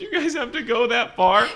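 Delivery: high, sobbing, crying wail, acted out. Retelling an anime scene where a character is shocked: imitating Polnareff crying. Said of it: "he's just crying".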